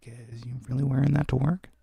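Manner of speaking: quietly muttered under the breath. Retelling what a character mutters while walking by: imitating someone mumbling. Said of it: "mumbling shit like".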